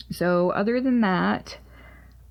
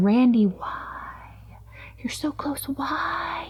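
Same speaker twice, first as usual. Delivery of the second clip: high, whispered taunting voice. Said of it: "It's been mocking me. Going".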